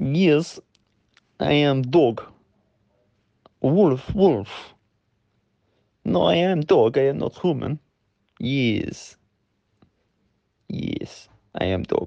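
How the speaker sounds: very slow, fake, put-on Russian accent. Trying out a Russian dog voice on the group: put-on Russian accent. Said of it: "Russian dog, Russian barking, eh, Ben? It's not a bad idea. Let me try a little bit out on you guys".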